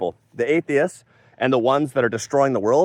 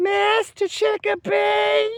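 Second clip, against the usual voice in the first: put-on odd, very high, girlish voice. Describing a show character who talks weird, the speaker tries her line in a girl voice. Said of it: "And obviously in a girl voice".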